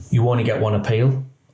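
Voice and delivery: normal talking voice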